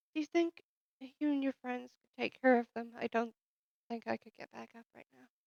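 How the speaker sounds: very hushed soft voice. In a roleplay, a trembling woman answers someone who put a coat on her, quiet voice. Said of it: "because I was being kind of quiet".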